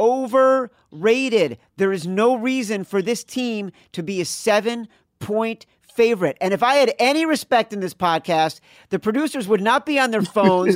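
worked-up, heated ranting. On a podcast, asked why they would pass on the team: ranting. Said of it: "during my rant".

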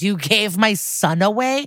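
long, stretched-out, put-on crying scream. Speaker recounts a man confronting a woman about his son, retelling a scream. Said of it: "And he screams".

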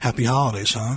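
dry, acted-out sarcastic aside. Recounting a side remark to the wife while watching the news, retelling a sarcastic remark. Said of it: "in a sarcastic tone".

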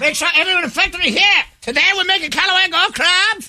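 play-acted high, mild shouted yell. In a bit, a character addresses everyone in the factory: shouting. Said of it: "I have to yell".

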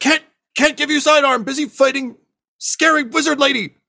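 shouting, pitched way up. Voicing a character who is busy fighting in the game, yelling. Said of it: "and he yells".

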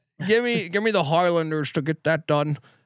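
terrible, bad put-on Scottish accent. Picking the Highlanders for a parlay, in a terrible Sean Connery accent. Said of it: "I have a fucking terrible Connery accent".

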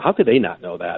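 ordinary talk

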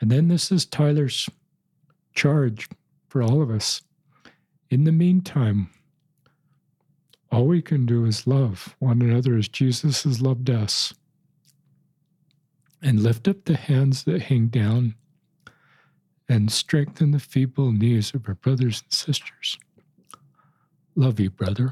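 tearful, crying while speaking. Reading aloud a roommate's written message, in tears. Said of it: "You can tell I'm in tears reading it".

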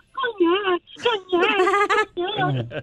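exaggerated, very high, swooping fake wailing sobs. Telling a joke about a dj crying in a bar: mock crying. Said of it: "así como llora, ¿no?".

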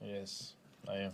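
deadpan, not excited. Asked about being excited to play on Christmas Day, answering flat and unexcited. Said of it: "Don't sound too excited".

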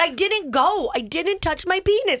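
put-on loud, high child's voice. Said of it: "says so loud in a public bathroom".

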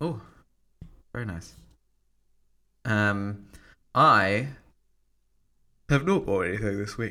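talking through a yawn. Chatting about MacBooks and Apple gear, the speaker talks through a yawn. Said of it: "I'm yawning now".

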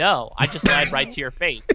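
mock deadpan, dry, sardonic delivery. Retelling his reply when others ask if it's true, retelling a deadpan, sardonic reply. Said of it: "such like a deadpan and sardonic way of talking".

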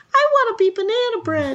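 squeaky, very high, silly cartoon voice. Retelling someone's impression of a banana to the others: talking banana character voice. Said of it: "a very good impression of a banana".

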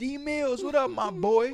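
put-on high, hollered yell. Retelling calling out through a car window: retelling own yell. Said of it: "And I yelled out the window".

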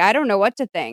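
ordinary talk

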